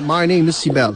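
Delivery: put-on English accent, rolled and rounded words. Showing someone how to sound like an english person, in a rounded english accent. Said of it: "Böyle yuvarlayarak".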